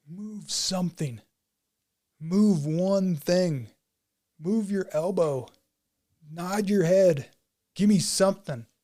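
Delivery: full-throated screaming. Retelling falling debris, screaming at a motionless body: retelling own screaming. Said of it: "just screaming at him".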